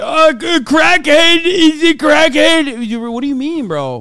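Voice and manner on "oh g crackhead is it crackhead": very loud, slow, chewing, gummy-mouthed voice. Mocking a man who calls others crackheads: imitating someone gumming, coke mouth. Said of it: "he's gumming".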